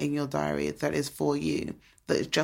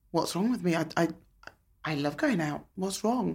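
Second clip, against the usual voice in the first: distressed voice, on the verge of tears; 2 semitones higher than usual. Recounting being unable to step out the door to meet friends, retelling distress near tears. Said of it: "And I just burst into tears".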